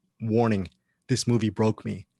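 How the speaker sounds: plain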